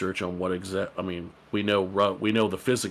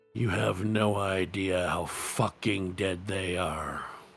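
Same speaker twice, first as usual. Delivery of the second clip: measured, step-by-step, sinister, threatening voice. Narrating a voice that answers a character in her head, in Jimmy's methodical, sinister voice. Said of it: "says to you in a very methodical, sinister voice".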